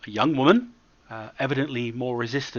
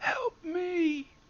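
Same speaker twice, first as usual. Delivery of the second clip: thin, soft, very high little voice; 5 dB quieter than usual. Voicing someone inside a shaking pod next to Ryoko, in a thin voice. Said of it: "you hear a thin voice from within saying".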